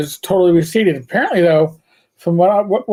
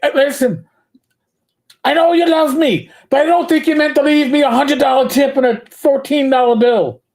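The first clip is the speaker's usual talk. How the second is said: put-on Irish brogue, pitched up high; 8 semitones higher than usual. Speaker retells a woman phoning him about a tip, Irish brogue. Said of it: "yelled at in an Irish accent, an Irish brogue".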